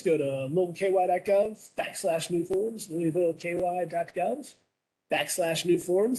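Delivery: polished on-air radio announcer voice. During a meeting, the speaker makes an announcement in their best radio voice. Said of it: "my best radio voice".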